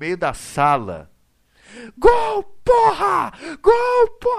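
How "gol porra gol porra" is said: very high, crazed, drawn-out scream. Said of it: "eu saí gritando igual um maluco".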